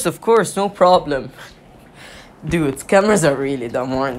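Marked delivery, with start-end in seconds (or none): 0.0-1.3 put-on sarcastic tone of voice. Retelling their own typed reply to a scammer, acting mock-sarcastic. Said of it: "in a sarcastic tone".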